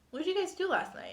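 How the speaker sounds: very high voice, part cross, part worried. Retelling the mom coming up to the speaker and sister, mock half-mad tone. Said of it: "like kind of mad".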